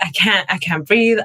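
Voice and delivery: plain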